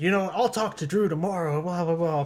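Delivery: put-on irritated, fed-up, pissed-off tone. Retelling the owner's reply to a late-night prank call: imitating an angry reply. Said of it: "pissed off".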